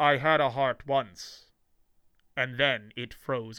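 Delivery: slow, muffled put-on villain voice. Speaker quoting a Batman villain line as Arnold Schwarzenegger, cold, muffled Schwarzenegger impression. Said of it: "like muffled thing".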